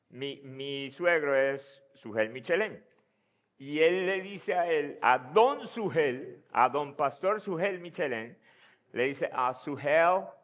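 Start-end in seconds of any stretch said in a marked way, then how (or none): 9.3-10.2 imitated American accent, louder. Retelling how the sister-in-law's boyfriend addressed the father-in-law: imitating an American accent. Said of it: "en su acento americano decir".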